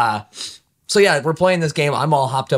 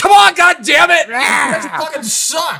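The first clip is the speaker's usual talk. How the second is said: mock very high, loud, drugged-out raging yell; 6 dB louder than usual. Recalling being recorded after losing, mimicking own drugged-out rage. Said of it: "my fucking drugged out rage going".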